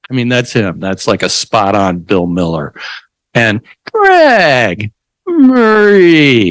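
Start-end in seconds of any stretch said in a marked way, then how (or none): 3.9-6.5 very high, patronizing sing-song lilt, name stretched out. Imitating Marie again: mock condescending tone. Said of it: "Couldn't be any more condescending sounding".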